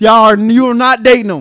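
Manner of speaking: yelled loudly. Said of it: "I'm yelling at you".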